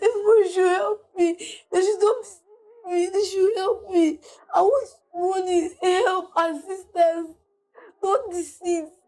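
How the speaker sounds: crying, pleading voice. Saying they are innocent and need assistance, crying while pleading for help. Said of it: "pleading for help while crying".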